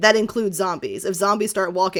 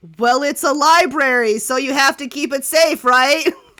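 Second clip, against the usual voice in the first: loud, raised voice with big energy; 7 semitones higher, 7 dB louder than usual. A character answers a player's loud question about the library's magic: loud, matching volume. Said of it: "She matches your volume and goes".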